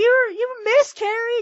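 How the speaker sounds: shrill, loud, very high-pitched blurted delivery. Retelling a coworker's question about a miscarriage, imitating the coworker saying it loudly. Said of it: "said it really loudly".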